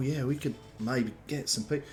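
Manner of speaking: muttered under the breath. Retelling the players' huddled talk: under the breath. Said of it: "sort of under your breath".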